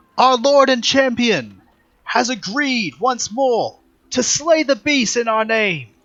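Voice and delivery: booming herald cry, very high-pitched and very loud. Narrating a game, voicing a woman addressing the party before a temple, booming voice. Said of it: "her voice booms as she speaks".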